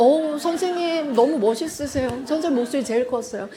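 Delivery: normal talking voice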